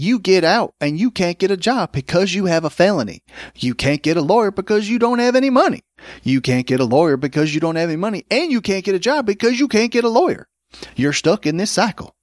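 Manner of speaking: put-on heavy, broad Oklahoma accent. Quoting what a man said about people with felonies, in a really thick Oklahoma accent. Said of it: "he had a really thick Oklahoma accent too".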